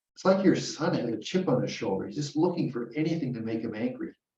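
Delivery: ordinary talk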